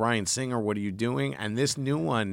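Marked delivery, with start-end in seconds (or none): 0.0-1.3 irritated, furious angry outburst. Retelling walking out of a hated movie, retelling own angry outburst. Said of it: "I was really pissed".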